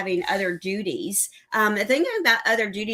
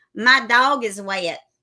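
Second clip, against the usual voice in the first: Southern drawl accent; 6 dB louder than usual. Demonstrating a phrase only a true southerner can say, in a southern accent. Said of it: "a phrase that you can only truly say if you are a true southerner".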